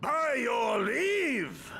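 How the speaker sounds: thunderous booming voice. In a game scene, a character calls out a formal greeting in a booming voice. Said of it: "that voice could fell a gigas".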